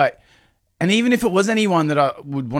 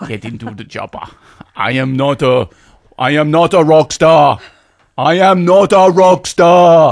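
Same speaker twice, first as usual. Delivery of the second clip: put-on Austrian accent, louder; 7 dB louder than usual. Asked to do the line as Arnold Schwarzenegger: Arnold Schwarzenegger accent. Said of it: "in an Arnold Schwarzenegger accent".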